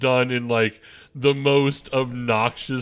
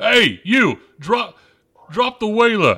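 put-on loud, much higher-pitched yelling in cockney accent; 9 semitones higher, 5 dB louder than usual. Voicing a character yelling up to the boys, in a cockney accent. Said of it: "Now she's cockney for some reason".

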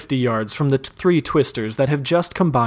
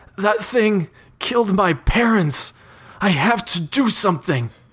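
tearful, pitched-up voice, welling up; 7 semitones higher than usual. Reading a story aloud, Matt answers Nova: tearful Matt line. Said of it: "he says. / and she finally breaks eye contact and turns away from the boy".

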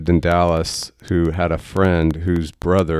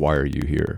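put-on voice with a sharp, real edge; 3 semitones lower, 4 dB quieter than usual. Retelling a patient's question to a seminary visitor: imitating someone speaking with a real edge. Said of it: "he said it with a real edge".

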